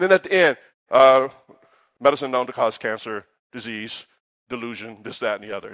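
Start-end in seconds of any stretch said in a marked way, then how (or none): 2.0-5.7 very quiet, rushed, low fine-print disclaimer patter. Mocking the end of a medicine commercial, imitating a fast drug disclaimer. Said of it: "It's real fast".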